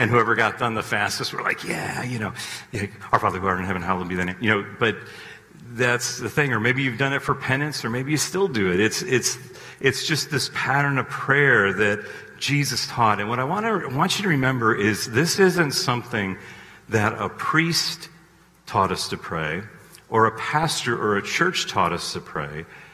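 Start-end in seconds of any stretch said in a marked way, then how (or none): 1.6-4.4 rattled off as fast as possible, low voice. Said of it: "we would say it as fast as we could".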